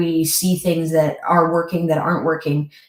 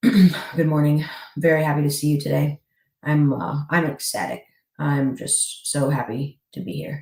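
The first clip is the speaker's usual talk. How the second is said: glum, joyless, unhappy tone. Showing incongruent communication, cheerful words spoken in a flat, unhappy tone. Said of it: "my tone and my inflection are telling you a different story than what my words are telling you".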